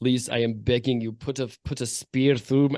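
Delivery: put-on heavy, laid-on, very thick Russian accent. Voicing a creature's human mouth speaking into the bathysphere, thick russian accent. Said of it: "says with a very thick Russian accent".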